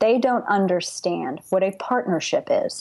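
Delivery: each word spaced out, very slow and deliberate. Making a point about partnership in a discussion: speaking very slowly. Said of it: "I will say this very slowly".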